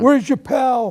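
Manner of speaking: high, slow, called-out shouting.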